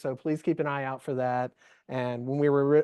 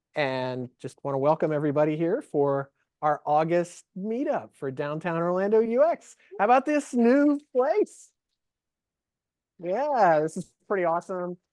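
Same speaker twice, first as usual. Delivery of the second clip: raised voice projecting to a large room; 3 semitones higher than usual. Host welcoming everyone to the August Downtown Orlando UX meetup; raised voice for the room. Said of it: "I'm gonna raise my voice for the room".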